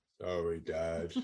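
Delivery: proper deadpan, very low, level and flat. Imitating how Charlotte apologizes without meaning it: imitating a deadpan apology. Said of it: "she does it like this".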